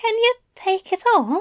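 very high, feeble, weak, thin voice. Narrating a story, one character asks another a question, feeble, thin voice. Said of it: "he asked in a feeble, thin voice".

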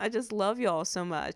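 teary, choked-up, nearly crying. Host thanking listeners before today's To Be Heard Tuesday content, nearly crying. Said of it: "I'm like crying".

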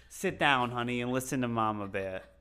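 put-on loud Bronx accent. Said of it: "Do it in the accent again".

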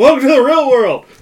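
loud, high yell. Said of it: "some fucker yells".

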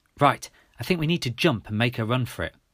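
plain

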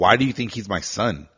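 put-on angry tone. Retelling a customer's reply to the sales pitch: imitating an angry customer. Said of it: "He fucking looks at me pissed".

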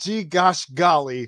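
prim, wholesome, polite and buttoned-up voice. Retelling a coach at the press conference: imitating Zach Taylor at a press conference. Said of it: "he's just".

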